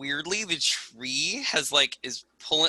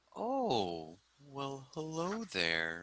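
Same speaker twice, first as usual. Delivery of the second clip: unhurried, very slow, drawn-out tree voice; 12 dB quieter than usual. Voicing a tree that answers a plant-speaking spell: talking tree voice. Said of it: "And then you hear".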